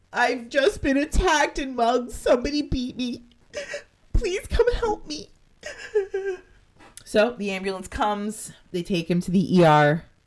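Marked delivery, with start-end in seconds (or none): 0.2-5.3 very high-pitched, weepy sobbing voice. Telling a story, speaker acts out a man's emergency call, imitating him crying. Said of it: "And he's crying".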